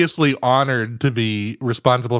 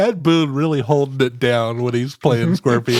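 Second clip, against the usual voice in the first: ordinary talk, nothing marked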